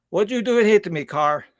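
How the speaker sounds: put-on Russian accent, pitched a bit high. Speaker quoting a big man after a car ran into him: Russian accent. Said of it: "he still had the Russian accent".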